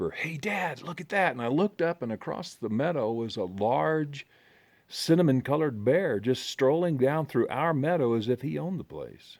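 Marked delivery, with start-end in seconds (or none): 0.1-1.3 high, loud, carrying stage whisper. Retelling a son spotting a bear across the meadow: imitating a loud whisper. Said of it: "in a loud whisper".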